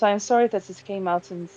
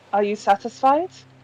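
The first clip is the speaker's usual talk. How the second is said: normal talking voice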